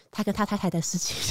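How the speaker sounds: soft, breathy, under-the-breath whisper. Retelling what one person said quietly from the side: imitating a quiet whisper. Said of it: "很小声地说".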